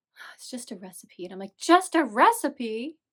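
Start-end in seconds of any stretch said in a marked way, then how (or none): 0.2-1.3 deflated, barely whispered, hushed, disappointed tone. Retelling Kay's reaction during the game: imitating Kay's disappointment. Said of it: "Kay was all disappointed".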